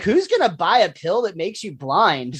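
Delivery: ordinary talk, nothing marked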